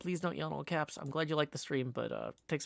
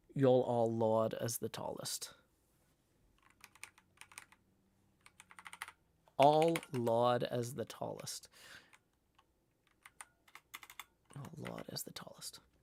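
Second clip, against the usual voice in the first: put-on British accent; 3 semitones lower than usual. Voicing a character in a shared story, British accent. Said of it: "My British accent is not abominable".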